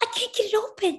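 very high, frantic, desperate voice. Struggling to unhook a necklace as heavy footsteps sound outside the door, frantic. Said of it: "Ellen said frantically".

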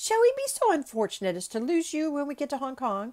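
light, teasing banter. Passepartout speaks to mr. fix the next day, in a bantering tone. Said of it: "said he in a bantering tone".

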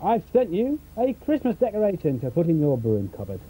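ordinary talk

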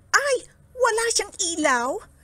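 startled, surprised cry, pitched very high. Silaw, noticing one that has no sparkle, exclaims surprised. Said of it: "Nagulat na sabi ni Silaw".

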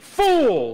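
firm, emphatic, full of conviction. Speaker has the audience repeat the word again; saying 'fool' with conviction. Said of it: "You got to say it like you mean it".

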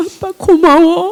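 high-pitched, slow voice, speaking through tears.

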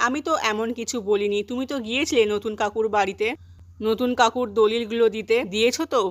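ordinary talk

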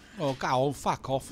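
London Cockney character voice. A game character answers a goodnight in a cockney accent. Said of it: "Cockney accent".

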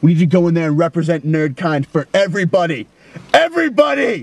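rousing, high, hectoring drill sergeant cry. Character addressing a companion who says he is scaring him, yelling. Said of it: "I'll tell you why I'm yelling at you".

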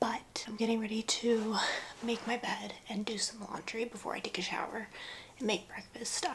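whispering. Speaker talks while everyone else in the house is still asleep, whispering. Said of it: "I'm whispering because everyone is still asleep".

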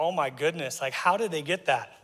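normal talking voice

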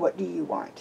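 through gritted teeth. Narrating a story, a man aiming his gun at a stranger asks: through gritted teeth. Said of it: "gritting his teeth".

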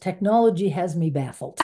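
plain

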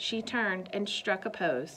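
ordinary delivery

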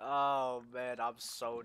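ordinary talk, nothing marked

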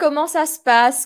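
plain

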